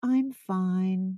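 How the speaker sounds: put-on sing-songy voice. Imitating clients answering how they are doing: imitating a sing-songy reply. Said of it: "That sing-songy".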